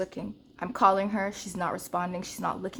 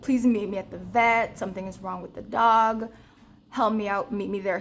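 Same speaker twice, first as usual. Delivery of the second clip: crying, begging, bawling, tearful pleading voice; 4 dB louder than usual. Retelling calling their dad on the way to the vet, imitating own crying plea. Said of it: "All this time I'm crying, I'm bawling".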